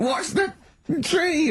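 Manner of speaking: very high, frantic, panicked scream. Recounting reversing toward a big oak tree, retelling a panicked scream.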